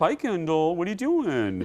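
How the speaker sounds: high, swooping put-on voice. Imagining a fighter pilot with this voice, Kip from Napoleon Dynamite voice. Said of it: "imagine a fighter pilot with this voice".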